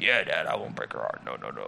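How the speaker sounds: very low, rough, creaky put-on old-man voice. Father retelling his son's promise not to break his mama's heart, talking like an old dude. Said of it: "Talking like he's an old dude".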